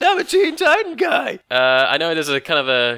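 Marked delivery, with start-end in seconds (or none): 0.0-1.4 very high, squeaky youngster voice. Joking about joining Teen Titans despite not being a teen, squeaky teen voice. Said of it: "if I put on a squeaky voice".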